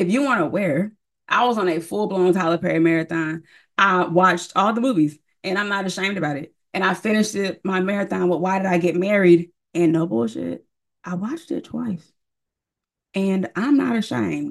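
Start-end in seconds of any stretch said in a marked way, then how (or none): 9.7-14.5 hushed, whispering voice. Speaker making an admission about a movie marathon, whispering. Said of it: "even though I'm whispering for no reason".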